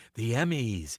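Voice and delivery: grand, special promo announcer voice. Recalling early Emmy promos, imitating his own old announcer delivery. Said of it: "I was kinda talking like this".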